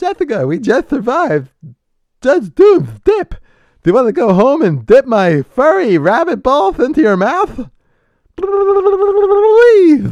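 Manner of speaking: big loud squeal with a stretched-out ending. Speaker acting out dirty talk between two cartoon characters, in Roger Rabbit impression. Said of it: "my Roger Rabbit impression".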